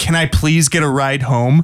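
mock weary, insistent repeated pleading. Retelling a stranger asking for a ride: imitating a weary repeated plea. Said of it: "tone of, like, he had been asking me over and over".

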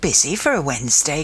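ordinary delivery

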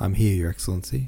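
ordinary delivery

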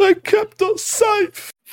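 very high-pitched speech through tears, crying. In a roleplaying game, voicing a character who is crying, crying while talking. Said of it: "He's just crying".

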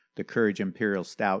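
ordinary talk

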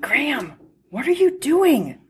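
whispering. Narrator reading Perry's question to Graham, whispered. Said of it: "Perry whispered".

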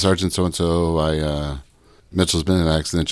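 ordinary talk

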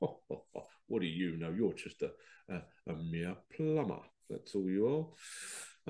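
mimicked breathy, condescending little laugh. A plumber retells how a man laughed at him; mimicking a condescending laugh. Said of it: "this the condescending type laugh".

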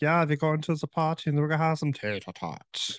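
put-on man's German accent. Chatting about accents, imitating some guy from germany, german accent. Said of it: "you have some guy from Germany like".

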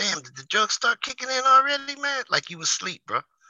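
very high, squeaky mock voice with wide pitch swings.

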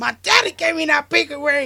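furious, very loud, high angry yell. Acting out a scene with two people, imitating an angry man. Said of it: "he's all pissed".

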